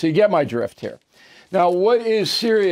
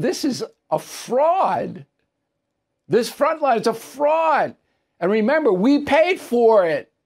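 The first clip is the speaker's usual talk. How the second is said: high, slow, indignant scoff. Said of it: "I'm going".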